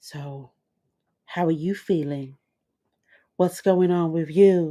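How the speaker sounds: put-on seductive whispering voice. Retelling a terrace scene with Tony, imitating her seductive whisper. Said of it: "She's doing her whispering voice as she does".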